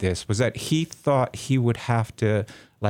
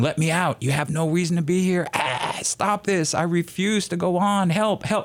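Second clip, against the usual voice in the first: put-on, high, wild screams of pain; 6 semitones higher than usual. Retelling a shocked man's pleas in an experiment: imitating someone screaming in pain. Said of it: "And just screaming".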